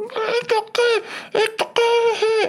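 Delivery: very high, stretched-out, drawn-out scream. Recounting a scene with riot cops, acting out the girl on the megaphone screaming as she ran past. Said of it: "the girl on the megaphone ran by me screaming".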